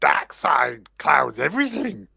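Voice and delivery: creaky, rough put-on voice. Giving a Yoda impression when asked for it: Yoda impression. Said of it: "give us your".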